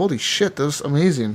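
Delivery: ordinary delivery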